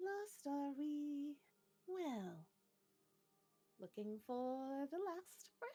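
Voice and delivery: gentle, high, slow, unhurried voice. A being hovering above a ship's main deck speaks, in a soft voice. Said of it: "In a soft voice".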